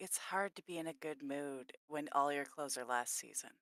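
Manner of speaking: soft, hushed half-whisper, put-on voice. Half-whispering a remark back to Lulu in character: half-whispering in character. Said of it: "I'm gonna whisper back to Lulu".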